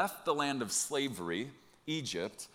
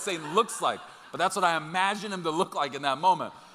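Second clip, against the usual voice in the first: plain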